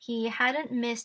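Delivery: ordinary delivery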